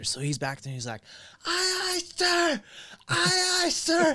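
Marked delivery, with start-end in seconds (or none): 1.4-4.2 put-on scream, higher pitch. Retelling a recruit ordered to scream in the corner: imitating a recruit screaming. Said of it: "he told him that he had to scream".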